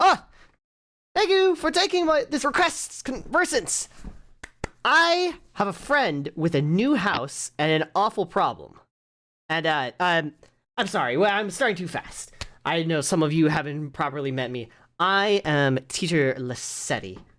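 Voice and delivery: cheery, cheerful, swooping exclamations. A game master voices teacher Lassetti greeting the group, cheerful Lassetti voice. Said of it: "she has quite the cheerful voice as she sees you all and exclaims".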